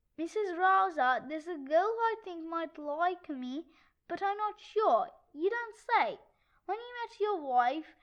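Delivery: ordinary delivery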